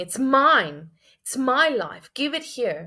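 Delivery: greedy, demanding cry, shouted. Acting out people ripping pearls from God's hand, imitating a shout.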